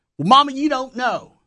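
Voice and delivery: put-on Texas accent. Mocking how he delivers a line, in a concocted texas accent. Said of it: "His accent sounds concocted at best".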